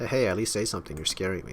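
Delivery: ordinary delivery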